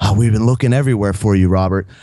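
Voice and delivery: mock huffing and puffing, breathless. Retelling how someone rushed up looking for him: imitating someone huffing and puffing. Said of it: "huffing and puffing".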